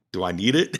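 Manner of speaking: sassy tone full of attitude. Retelling a reply to the shaman's offer: imitating own attitude. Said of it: "My attitude was a little different".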